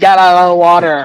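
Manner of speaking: ordinary talk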